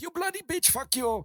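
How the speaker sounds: put-on Indian accent, pitched high, argumentative tone. Retelling a video of two men arguing: imitating an Indian man arguing. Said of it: "it's two Indian guys arguing".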